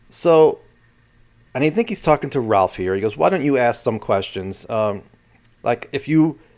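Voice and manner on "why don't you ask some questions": normal talking voice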